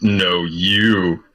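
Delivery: divine voice from the clouds, "you" stretched. Casting Thaumaturgy to intimidate the others: booming voice from the clouds. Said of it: "booming s-, voice from the clouds".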